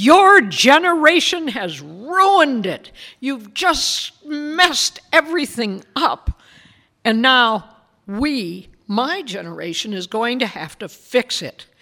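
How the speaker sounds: high, loud, slowed passionate outburst. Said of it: "in this very passionate voice".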